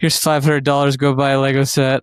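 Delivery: mock troubled, distressed, upset blurt. Mocking the other speaker's telling of being handed money: mock distressed tone. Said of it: "you were saying it like it was such a negative thing".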